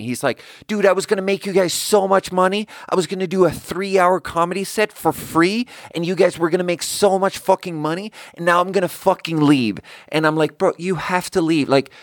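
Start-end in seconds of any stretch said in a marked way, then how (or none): 0.7-9.8 high-pitched, screaming rant. Retelling what a man said as he screamed at them; retelling someone screaming. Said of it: "And he's screaming at me".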